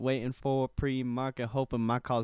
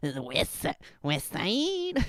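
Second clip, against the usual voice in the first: put-on cartoon kid voice, higher pitched; 5 semitones higher than usual. Trying out a voice, then admitting it fails: bad Cartman voice. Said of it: "I can't do a good Cartman voice".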